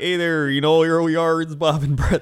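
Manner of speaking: put-on Minnesota-Wisconsin accent. Imitating the hosts of videos the speaker watches: Minnesota, Wisconsin accent. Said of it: "They just have like the Minnesota, Wisconsin accent".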